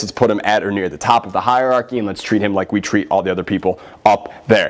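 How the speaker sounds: normal talking voice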